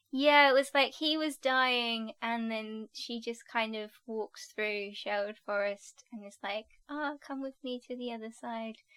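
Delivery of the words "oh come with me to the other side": play-acted sultry, come-hither seductive voice. Retelling a TV scene where Marion calls a dying man over: imitating Marion, sounding seductive. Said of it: "The way you said it's like she was dressed in lingerie".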